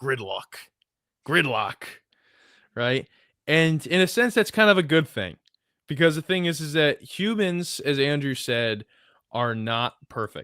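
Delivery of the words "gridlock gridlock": put-on gridlock said in Eastern European accent. Quoting what a man used to call it, in his eastern european accent. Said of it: "in his Eastern European accent".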